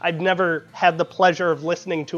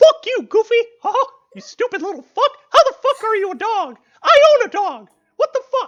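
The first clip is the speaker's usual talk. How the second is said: shrill, loud and swooping voice; 5 dB louder than usual. Doing cartoon voice impressions, replying to Goofy, in a Mickey Mouse voice. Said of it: "a whole bunch of uh, uh, voice impressions".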